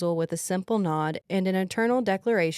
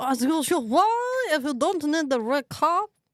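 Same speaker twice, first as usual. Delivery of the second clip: put-on French accent, higher pitch; 8 semitones higher than usual. Saying a line after being asked to: french accent. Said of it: "you need to say it in a French accent".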